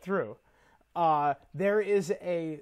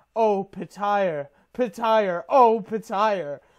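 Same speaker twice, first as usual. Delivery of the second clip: put-on screaming, higher-pitched and louder; 3 semitones higher, 6 dB louder than usual. Retelling an audiobook scene, imitating Roy Dotrice screaming at top of lungs. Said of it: "Lysa Arryn screaming at the top of her lungs".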